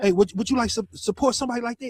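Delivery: acted forceful salesman-like tone. Retelling how a fighter pushed his poster on people: imitating someone being aggressive. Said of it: "so kinda aggressive".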